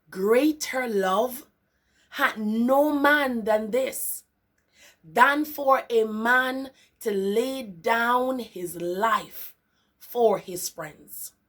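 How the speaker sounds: very slow, drawn-out reading. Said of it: "I'll go again".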